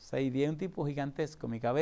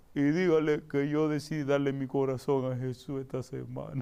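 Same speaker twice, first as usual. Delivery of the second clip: put-on tearful weeping through the words. Speaker retelling what a weeping man told him, imitating a man crying. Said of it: "pero así con una voz así".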